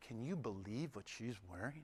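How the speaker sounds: very soft, very low under-the-breath murmur. Speaker showing the kinds of things people murmur: murmuring. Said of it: "guilty of murmuring".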